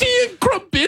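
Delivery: put-on English accent. In a group talk about English accents, joking in a mock English accent. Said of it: "that English accent".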